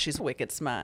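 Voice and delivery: Boston-accented speech. Podcast co-host joking in the show's accent corner, Boston accent. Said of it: "This is the Boston accent corner of the podcast".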